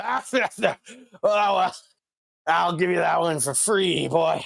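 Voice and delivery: dwarf voice, laughing while talking. Voicing a laughing dwarf trader after using a wand: laughing while talking in character. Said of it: "he just laughs it up".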